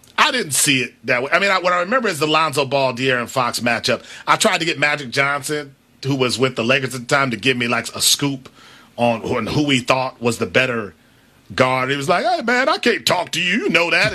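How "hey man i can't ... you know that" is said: casual, dismissive, conversational brush-off tone. Retelling being turned away by Magic Johnson: Magic Johnson impression. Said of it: "is that your Magic Johnson impersonation?".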